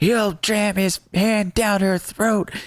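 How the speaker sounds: acted, very high, drawn-out, frantic yell. Retelling a movie scene where a man flips out: imitating Kyle yelling.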